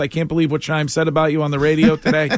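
ordinary talk

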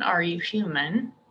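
ordinary talk

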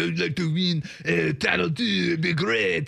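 put-on French accent, very slow and drawn out. Acting out an NBA player's statement, Gobert impression, French accent. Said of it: "Gobert comes on with his French accent".

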